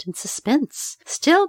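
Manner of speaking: ordinary delivery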